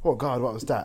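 ordinary delivery

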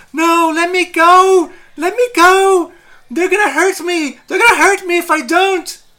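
very high, frantic, panicked screaming. Game master voicing an undead ghoul woman who is screaming, screaming in panic. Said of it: "And she's like screaming".

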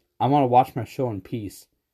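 normal talking voice

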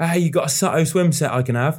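playful, high, joking banter tone. Retelling joking around with the swim coach at the poolside, retelling a joking request. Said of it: "like joking".

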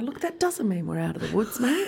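formal politician-style official delivery. Talking about Victoria reaching no cases: Dan Andrews impression. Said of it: "I'm gonna be a bit of a Dan Andrews right now".

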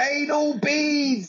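mock very high shouted call. Retelling a heckle from a student in the front row: imitating someone shouting. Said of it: "she shouts out".

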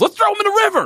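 very high, thrilled, excited blurted outburst. Retelling how a character reacted after being untied: imitating very excited shouting. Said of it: "very excited".

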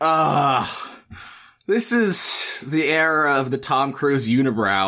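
weary frustrated sigh. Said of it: "my wife just let out an exasperated sigh and said".

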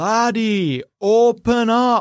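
distant voice, as if far down a corridor. The dwarf looks up through the door slot and speaks, distant as down a corridor. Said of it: "When he speaks, though, it sounds like he's at the other end of a corridor".

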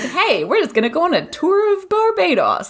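high, upbeat, cheery American tour-guide voice.

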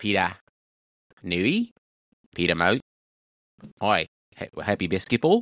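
terrible fake Australian accent with swooping pitch. Showing a best accent after being asked: terrible Australian accent. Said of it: "still have a terrible Australian accent".

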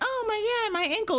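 mock tearful, very high crying wail. Retelling a story about the Doctor and Susan, imitating Susan crying. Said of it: "Susan starts crying".

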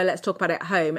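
plain

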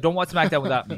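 ordinary talk

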